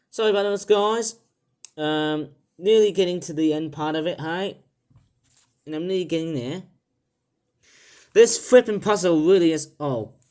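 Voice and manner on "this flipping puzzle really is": loud, angry ranting voice. Stuck near the end of a puzzle, talking to viewers, in an angry voice. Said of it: "I've just jerked with my angry voice".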